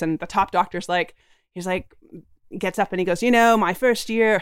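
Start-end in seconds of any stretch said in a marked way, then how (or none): 3.2-4.4 put-on British English accent. Retelling what the top doctor said at a meeting: imitating a doctor's English accent. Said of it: "an English accent".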